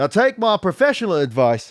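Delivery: British character voice, spy-film style. Reading a character's line aloud in Jeffrey Saint John voice. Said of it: "how do I get into this voice?".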